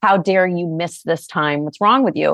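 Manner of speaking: mock harsh, punishing scolding tone. Speaker recalls how they talked to themselves in their early 20s, acting out punitive self-talk. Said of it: "it would have been much more punitive".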